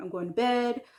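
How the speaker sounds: usual speaking voice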